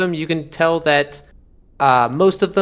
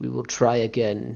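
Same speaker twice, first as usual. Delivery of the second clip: intoning creature voice, lower and quieter; 4 semitones lower, 6 dB quieter than usual. Voicing a mind flayer that speaks telepathically after a failed ritual: mind flayer intoning. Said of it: "telepathically intoning".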